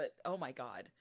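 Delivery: low, teary catch in the voice, near tears. Podcast host reacting to a disturbing story, tearing up. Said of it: "I don't know why that's making me tear up".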